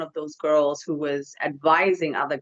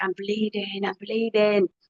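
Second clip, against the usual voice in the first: put-on, high-pitched squealing scream; 5 semitones higher than usual. Retelling seeing blood and screaming for mom: imitating a scream. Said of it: "I screamed at the top of my lung".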